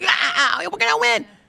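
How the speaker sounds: high, raspy, screaming shout like a cheering fan. Describing a politician running on stage fist pumping, imitating AOC screaming. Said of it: "fist pumping and screaming like".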